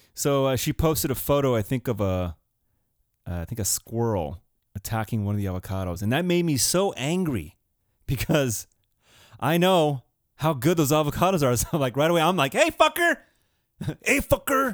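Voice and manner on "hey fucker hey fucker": put-on East Los Angeles street accent, much higher.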